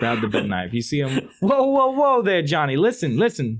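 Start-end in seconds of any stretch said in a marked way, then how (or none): 1.4-3.6 put-on very high, sing-song, swooping New Jersey accent. Game master voicing a man who confronts the player's character, in a New Jersey accent. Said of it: "New Jersey kind of accent".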